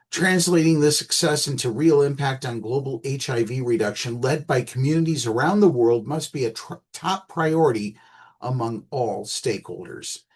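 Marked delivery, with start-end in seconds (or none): none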